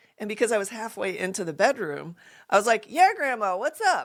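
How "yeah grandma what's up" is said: acted cool, unbothered, breezy casual tone, pitched up. Retelling answering grandmother through a door: imitating own past cool act. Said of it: "I was trying to sound so cool".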